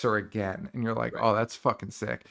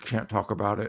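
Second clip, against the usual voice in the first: put-on clenched teeth, slower. Recapping a show where Allie answers Christy, imitating speaking through clenched teeth. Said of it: "through clenched teeth".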